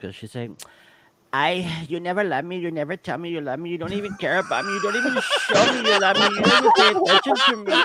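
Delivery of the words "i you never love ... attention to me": mad, accusing rant, high-pitched and swooping. Doing an impersonation of Veronica getting mad, as another speaker asked: imitating Veronica when mad. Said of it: "this is Veronica".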